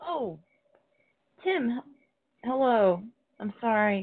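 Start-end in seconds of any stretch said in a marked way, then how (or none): 0.0-3.0 words jolted and broken up by hiccups. A caller greets Tim, who answered the inn's phone, hiccuping. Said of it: "I have the hiccups".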